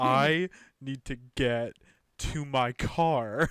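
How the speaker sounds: very slow, drawn-out, dragging each word. Mimicking how the other speaker talks in a game, speaking very slowly. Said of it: "It's just you speaking like so slowly".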